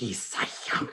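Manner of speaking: hushed, soft, breathy whisper. Voicing a character as the player hears her: whispering. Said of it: "you hear her whisper".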